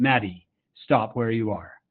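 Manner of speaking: put-on stern, parent-like voice. Speaker recounts calling out to a girl near a cliff, retelling in stern dad voice. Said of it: "I had to use my dad voice".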